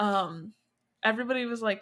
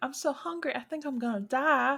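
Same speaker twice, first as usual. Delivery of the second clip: put-on sweet, dainty Southern accent, pitched high; 5 semitones higher than usual. Quoting her favorite line of the character: cute little Southern accent. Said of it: "In a cute little Southern accent".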